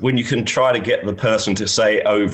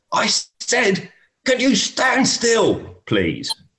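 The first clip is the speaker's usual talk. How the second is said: mock shrill, very high, swooping shout; 13 semitones higher than usual. Retelling a golf round, the speaker acts out a player shouting at a marshal. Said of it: "paul just shouts over at him again".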